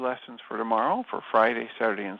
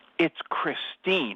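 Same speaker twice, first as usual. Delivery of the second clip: curt, abrupt, irritated, angry tone, pitched up; 5 semitones higher than usual. Retelling how a woman corrected her name, mimicking an irritated, abrupt reply. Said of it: "in a very irritated, abrupt, angry tone".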